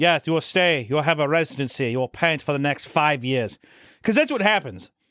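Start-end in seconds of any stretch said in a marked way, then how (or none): 0.0-3.6 fake, put-on German accent. Acting out someone offering them a painting residency, in a put-on German accent. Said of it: "I'm going to say German".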